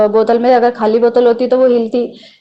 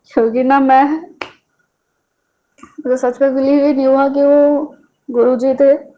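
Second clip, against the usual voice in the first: tearful voice, crying while speaking. Sharing a thankful testimony with the congregation, crying while speaking. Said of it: "मुझे रोना आ रहा है".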